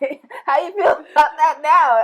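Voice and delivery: high, loud, laughing voice.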